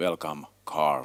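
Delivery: deadpan, very low, flat monotone. Host opens a session on a serious matter and welcomes a guest, in monotone. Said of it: "that's why I need to speak in monotone".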